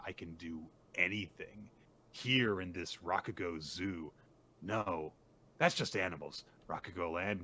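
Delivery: plain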